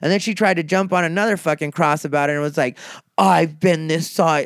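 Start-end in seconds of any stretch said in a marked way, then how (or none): 3.2-4.4 terrible put-on British accent, slow. Retelling an argument, quoting a woman from london in a terrible british accent. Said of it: "that's my terrible British accent".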